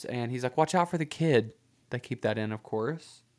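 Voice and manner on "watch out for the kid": mock panicked shout, much higher pitch. Retelling a ride where the driver almost hits pedestrians, imitating Howard's panicked shout. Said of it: "legitimate panic in Howard's voice".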